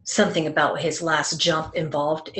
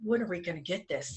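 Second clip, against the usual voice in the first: mock-impatient tone, quieter; 11 dB quieter than usual. Retelling what he said to the speaker during a wingsuit flight; imitating his impatience. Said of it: "he was getting a little impatient with me".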